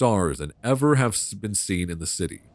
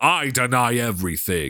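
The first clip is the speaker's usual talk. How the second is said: furious, raging, wrathful god voice; 3 semitones higher than usual. A narrator voices an idol god who rages, in a roaring angry god voice. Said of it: "The god's voice lifts to a roar of anger".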